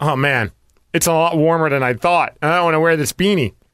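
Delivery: ordinary delivery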